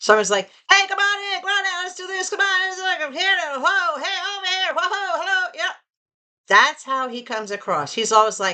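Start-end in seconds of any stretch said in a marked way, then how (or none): 0.7-5.7 very high, pitched-up sideshow carnival barker call. Describing how a man comes across at the auction, doing a carnival barker impression. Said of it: "what I'm going to call a carnival barker".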